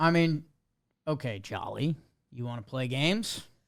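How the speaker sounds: annoyed, mad, needling, challenging tone. Arguing with a co-host over where to rank a player, sounding mad. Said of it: "You sound mad".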